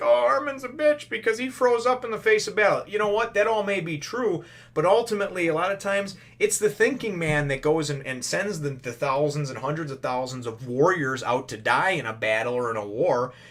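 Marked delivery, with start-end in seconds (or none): 0.0-2.8 high-pitched, mocking, whining tone. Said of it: "for those of you that were like".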